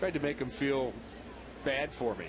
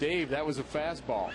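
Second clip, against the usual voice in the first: ordinary talk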